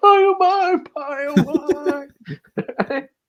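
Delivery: sobbing cry, very high, slow and drawn-out. Retelling a scene where Tony wakes from a dream: imitating Tony crying.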